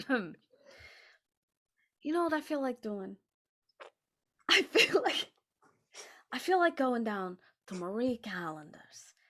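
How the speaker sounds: put-on sing-song voice, pitch swooping all over. Asked to speak in the Christopher Walken voice, doing Christopher Walken voice. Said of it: "In the Christopher Walken voice".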